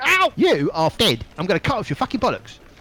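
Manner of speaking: very high-pitched, enraged, furious shouting. Recounting constables piling out and banging doors, act out one shouting. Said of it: "And shouting".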